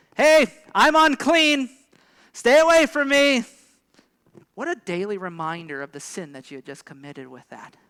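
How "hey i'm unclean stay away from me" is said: very loud, very high, slow, drawn-out shout. Acting out the warning an unclean person had to shout: shouted loudly. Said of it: "You would have to shout like this".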